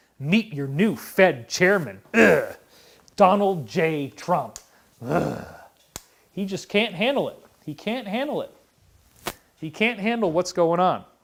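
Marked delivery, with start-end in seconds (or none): 0.2-5.4 put-on scornful, hateful tone, slower. Retelling how a man announced the new Fed chairman: imitating scornful hatred. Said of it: "with such scorn and hatred in his voice".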